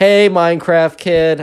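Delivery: loud, high, animated, fake-friendly call. Retelling a girl calling out loudly to a boy: imitating a loud call. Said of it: "very loudly".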